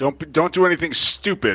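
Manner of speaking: calling out loudly. Yelling after a departing messenger on horseback: yelling after someone. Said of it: "I just yell at, yell after him".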